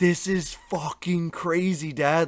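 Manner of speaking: slow, overcome, choked-up voice. Retelling words said while watching the news with family: imitating being choked up. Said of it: "all getting choked up".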